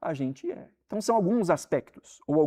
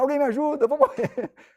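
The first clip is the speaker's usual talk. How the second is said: shrill, very high scream; 10 semitones higher, 3 dB louder than usual. Retelling a video of a woman calling for help: imitating someone screaming for help. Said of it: "Começou a gritar".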